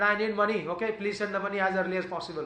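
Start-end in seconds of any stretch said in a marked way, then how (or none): none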